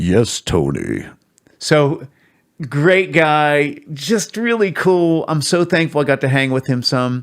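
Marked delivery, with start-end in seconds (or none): 0.0-1.1 deepest bass voice, very low. Retelling meeting the man who later gave the speaker lessons, imitating Pat's deep voice. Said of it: "he had the deepest voice".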